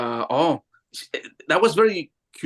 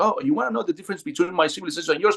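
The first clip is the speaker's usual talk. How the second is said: rushed, very fast, rapid-fire, rattled-off delivery; 4 semitones higher than usual. Retelling a woman's answer to the speaker's questions: imitating fast speech. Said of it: "But very fast. She was speaking like this".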